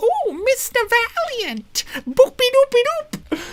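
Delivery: bad, very high-pitched cartoon voice. Trying out a Betty Boop impression: bad Betty Boop impression. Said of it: "Betty Boop. I did that last time, and I suck at doing it".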